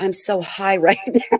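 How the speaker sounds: confiding stage whisper, as if close to ear. Retelling how a friend whispered in her ear: imitating a whisper. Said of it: "he whispers in my ear".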